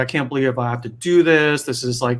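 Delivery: put-on tearful voice. Retelling Odysseus hearing he must go to the underworld: imitating Odysseus crying. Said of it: "Odysseus starts crying".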